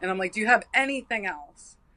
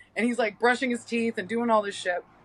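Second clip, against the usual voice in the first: ordinary talk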